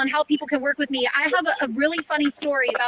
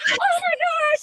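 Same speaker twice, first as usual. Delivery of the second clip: high, excited, squealed starstruck gasp. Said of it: "Arzel says".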